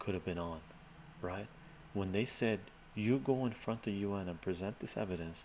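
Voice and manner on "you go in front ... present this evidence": usual speaking voice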